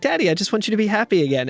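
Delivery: put-on genuine, completely earnest, sincere, high little kid voice. Retelling a little kid's line to his dad: imitating a sincere smiling child. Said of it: "completely genuine, big smile on his face".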